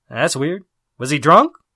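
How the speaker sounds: usual speaking voice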